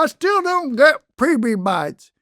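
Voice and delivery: very slow, drawling, high, put-on Southern accent. Voicing a person who didn't understand things, in a put-on Southern accent. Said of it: "adopting a Southern uh, accent as the person who didn't understand things".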